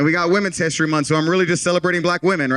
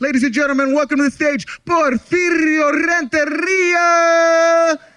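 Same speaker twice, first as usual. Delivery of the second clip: hyped announcer delivery, very high, drawn out; 11 semitones higher, 3 dB louder than usual. Retelling how he brings a friend up on stage: high-energy stage introduction. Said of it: "I got a lot of energy behind it".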